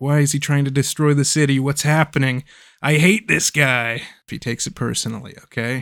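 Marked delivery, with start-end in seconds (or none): 0.0-4.0 put-on angry voice. Retelling a show's fight scene, quoting Robin: imitating Robin getting mad. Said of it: "Robin's getting real mad 'cause he's like".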